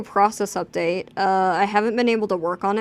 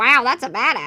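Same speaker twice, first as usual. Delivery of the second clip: bubbly put-on cartoon character voice; 2 semitones higher, 3 dB louder than usual. Told to say the line again, now in the bubble voice. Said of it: "in the bubble voice".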